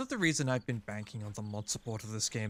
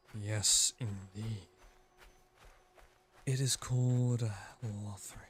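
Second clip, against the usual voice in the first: weirdly sensual, slow ASMR voice; 4 semitones lower than usual. Doing a joking Dark Souls ASMR bit, in a weirdly sensual ASMR voice. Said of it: "this is starting to get weirdly sensual".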